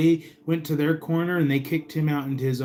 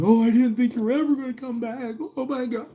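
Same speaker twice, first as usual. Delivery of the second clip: frantic, very high, rattled-off panicky dog voice; 10 semitones higher than usual. Voicing an anxious dog when the owner comes back: voicing a dog panicking. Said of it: "he was panicking".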